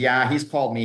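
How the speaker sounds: normal talking voice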